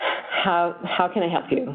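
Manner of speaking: insincere, fake tone with a sigh. Demonstrating an offer of help without real interest in helping: insincere, with a sigh. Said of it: "it's delivered in a way that doesn't feel like there's any um, authenticity".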